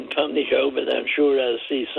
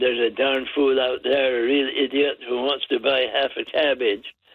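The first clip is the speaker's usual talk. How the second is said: ordinary talk, nothing marked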